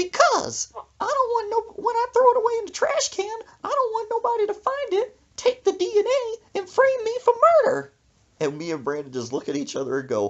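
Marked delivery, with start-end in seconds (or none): 0.0-7.9 put-on grandma voice, pitched very high. Retelling why Brandon's grandma burned her hair, imitating Miss Connie. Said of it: "She said in that voice".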